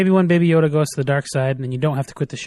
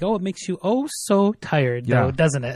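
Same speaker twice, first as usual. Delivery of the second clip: toying, put-on, teasing, mocking taunt; 3 dB quieter than usual. Retelling a villain's line to a child: imitating a mocking, teasing tone. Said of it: "teasingly, mockingly".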